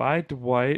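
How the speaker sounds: slow, lingering, stretched, drawn-out vampire voice. Imitating how he says goodbye when pretending to be a vampire, drawn out slowly. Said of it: "when he says it more slowly, like when he's trying to be the vampire".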